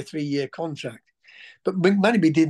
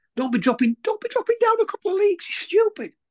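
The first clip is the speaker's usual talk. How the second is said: very high, squeaky, furious rant, rising and climbing. Retelling how Paul went ballistic with him: imitating Paul's squeaky ballistic voice. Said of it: "going ballistic with me in his squeaky little voice".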